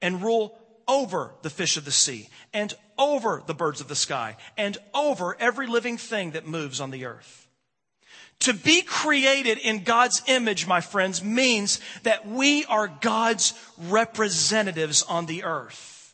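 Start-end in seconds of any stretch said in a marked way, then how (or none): 0.0-7.5 OVER stressed in every phrase. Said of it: "how often I emphasize the word over".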